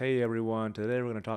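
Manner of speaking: flat, dull, low-energy delivery. A speaker demonstrates talking that brings an excited audience down, low-energy delivery. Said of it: "you start talking like this".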